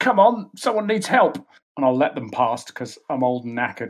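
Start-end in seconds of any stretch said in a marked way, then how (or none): 0.0-1.4 urgent shout, much higher pitched. A player's old character calls to the commoners around him: urgent shout. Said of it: "I'll shout to the commoners around me".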